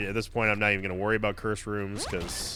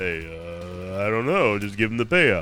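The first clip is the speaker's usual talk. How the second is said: put-on stuffy, slow, raised voice, stretched "uh"; 5 dB louder than usual. Playing a game, voicing an item: stuffy Sylvester Stallone voice. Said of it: "a very stuffy Sylvester Stallone".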